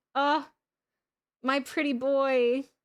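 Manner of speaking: loud, emotional gush, half sad, half excited. Looking at a character's in-game portrait, sad and excited. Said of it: "I got sad and excited".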